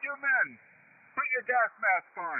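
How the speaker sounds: high-pitched yelling. Retelling how the battalion commander addressed the men: imitating a commander yelling. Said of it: "he starts yelling at us".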